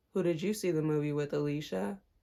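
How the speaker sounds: very low, creepy, dead-serious killer voice. Retelling a coworker's question at the table: imitating a scary serial killer voice. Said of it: "the scariest serial killer voice".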